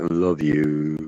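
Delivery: mock-unenthusiastic grumpy voice. Retelling how a son said it at the end, imitating a grumpy 'love you'. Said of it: "It wasn't very vigorant".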